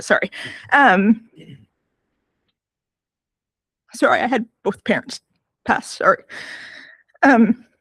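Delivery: choked-up, halting, breaking voice, near tears. Reading an email about a lost loved one, apologizing, on the verge of crying. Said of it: "I might break down a little bit".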